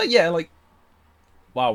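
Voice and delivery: voice breaks and cracks on wow. Explaining a wall blocking attacks during a turn-based battle, voice cracking. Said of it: "voice crack there".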